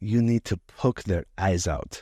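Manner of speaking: put-on strong Persian accent. Speaker quotes their father's advice about the coaches, heavy Persian accent. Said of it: "he had like real heavy accent".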